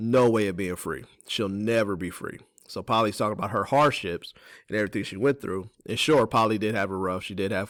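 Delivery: ordinary delivery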